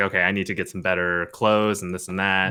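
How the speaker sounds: plain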